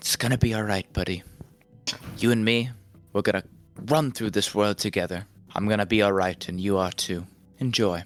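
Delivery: casual low whisper. A voice only you can hear speaks to you, in a casual whisper. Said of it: "He speaks to you in sort of a casual tone".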